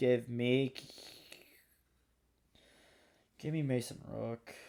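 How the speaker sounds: dejected, downcast, joyless delivery. Making wrestling championship picks with a co-host, the speaker sounds depressed. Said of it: "You sound so depressed saying that".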